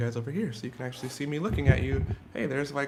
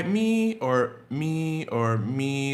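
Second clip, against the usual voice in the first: me held in a level tone at varying pitch heights; 4 dB louder than usual. Showing learners that a first tone can sit high or low: flat first tone at different pitches. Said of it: "It could be high".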